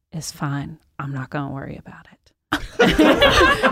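half-asleep, drowsy, dragged out very slow. Retelling what a sleep-deprived friend said after being rear-ended: imitating someone sleep deprived. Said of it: "he's so sleep deprived".

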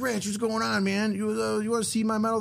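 dopey California dude voice. Retelling an encounter, the speaker voices a man who came over to him: imitating Clint, Californian dumbass. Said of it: "he sounds like a fucking Californian dumbass".

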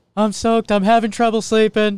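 very high, shrill, loud gravelly voice. Trying the same quote again, imitating Gerrit Cole, sounding like Seinfeld. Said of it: "you just went to, like, Seinfeld again".

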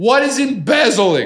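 imitated drunk man yelling. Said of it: "He's drunk at these clubs and he's yelling it".

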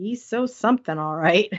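mock muttering under breath. The speaker quotes a favorite line from the story, retelling a mutter under breath. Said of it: "Anne mutters under her breath".

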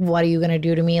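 plain

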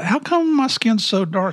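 put-on curious, childlike little kid voice.

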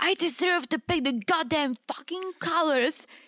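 mock unhinged outburst, yelled but kept small. Speaker retells a woman yelling at a man, absolutely losing it; retelling a yell. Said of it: "she's like yelling at him, like absolutely losing it".

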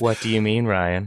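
put-on sexy, seductive robot voice. Returning guest answering host Ryan after a break, sexy Westworld robot voice. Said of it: "that was a very sexy Westworld robot".

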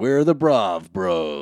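loud put-on promo announcer voice. Recording a promo for the Brav Bros, put-on promo announcer voice. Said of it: "stop with the voice".

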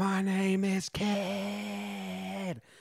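put-on very slow, drawn-out, rough, raspy cry. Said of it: "and then screams".

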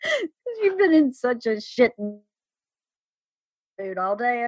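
words broken up by laughing throughout. Asked why they are laughing so hard, the speaker answers, laughing while talking. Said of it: "Why are you laughing so fucking hard?".

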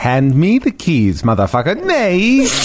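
English spoken in a put-on Swedish accent. Friends take turns saying the same line in a Swedish accent. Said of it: "in a Swedish accent".

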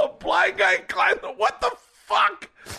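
put-on very high squeal, laughing through tears. Retelling laughing on the treadmill about the blind climber: imitating laughing till crying. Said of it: "I'm crying on the treadmill going".

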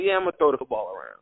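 mock breezy, casual, nonchalant, offhand throwaway tone. Questioning an interview answer, imitating Joe Burrow saying it nonchalantly. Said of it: "saying it so nonchalantly".

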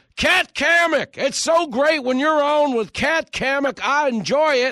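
very high-pitched, loud yelling. Retelling how someone started yelling praise: imitating someone yelling. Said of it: "He just started yelling".

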